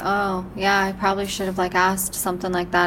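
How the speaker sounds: ordinary delivery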